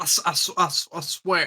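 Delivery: exaggerated cartoon-rooster drawl. Mocking how Mike says 'I swear': Foghorn Leghorn voice. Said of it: "he sounds like Foghorn Leghorn".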